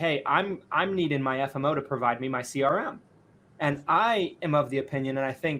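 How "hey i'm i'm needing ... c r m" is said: usual speaking voice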